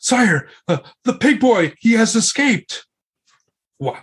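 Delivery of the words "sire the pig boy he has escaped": huffing, out-of-breath voice, very high. Retelling the castilian running up to tell the king, acting out a huffing report. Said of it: "like in a huffing voice to the king".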